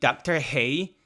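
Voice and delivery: put-on Northern Irish accent. Echo how a woman you are both discussing says doctor who, in a northern irish accent. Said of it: "in her Northern Ir- Northern Irish accent".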